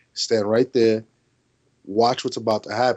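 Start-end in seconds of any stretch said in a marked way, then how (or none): none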